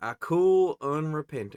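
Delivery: put-on loud, slow southern accent. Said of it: "Let me use my southern accent for a lot of these".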